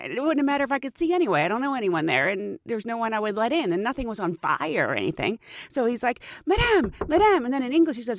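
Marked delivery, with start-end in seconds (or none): 6.5-7.5 play-acted, very high, anxious, worried voice. Retelling what a man at the door called out, imitating a worried voice. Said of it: "talking in a really worried voice".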